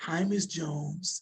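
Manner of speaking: very soft, hushed, soft-spoken voice. Retelling greeting his former kindergarten teacher, in a very soft voice. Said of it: "I said in a very soft voice".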